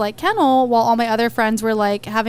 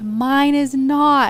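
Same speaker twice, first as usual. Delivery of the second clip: hostile, distant, screamed yell; 3 semitones higher than usual. Speaker retells answering a dog owner across a parking lot; retelling a scream. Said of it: "I'm screaming across the parking lot".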